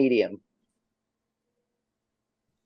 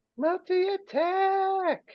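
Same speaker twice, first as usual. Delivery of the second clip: very high, slow, drawn-out monster call. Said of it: "and be like".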